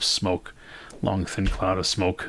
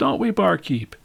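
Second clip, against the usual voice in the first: shrill, high, loud yell; 10 semitones higher, 4 dB louder than usual. Voicing a gambler calling across the bar to the barkeep: yelling across the bar. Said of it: "hear him yell across".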